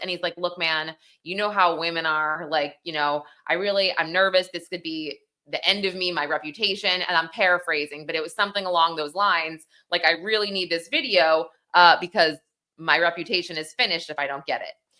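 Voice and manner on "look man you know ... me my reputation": ordinary talk, nothing marked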